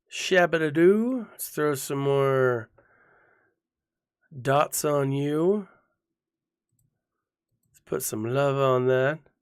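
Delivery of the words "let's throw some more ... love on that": put-on sexy, sultry voice. Commenting while playing a game, in a sexy Sith voice. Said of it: "That's my my sexy Sith voice".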